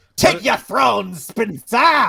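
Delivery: very high, loud put-on voice. After winning, the speaker claims the throne in a Palpatine voice. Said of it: "I was trying to do like Palpatine".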